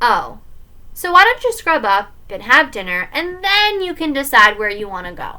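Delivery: plain reading voice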